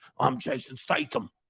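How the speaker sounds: breathy, whispered action-hero style delivery. Naming actors he could fight, doing a Jason Statham impression. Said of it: "That's my best impression I could ever do".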